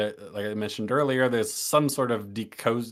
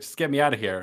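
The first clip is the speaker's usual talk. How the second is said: mock yelling, pitched higher; 2 semitones higher than usual. Retelling a film scene where a captive keeps yelling: imitating Catherine yelling. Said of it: "she just keeps yelling".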